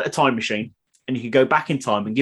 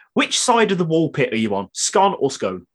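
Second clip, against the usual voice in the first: normal talking voice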